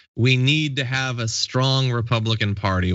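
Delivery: normal talking voice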